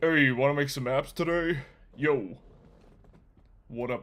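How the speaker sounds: laid-back, put-on cool guy slang voice. Picturing stepping out of a Cybertruck and greeting people: put-on cool guy voice.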